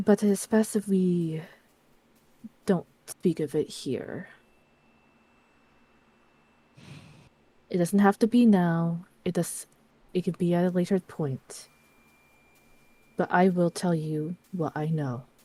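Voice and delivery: voice dropped, hushed. A woman glances around the room, then speaks to Lexi, lowered voice. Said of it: "she lowers her voice and goes".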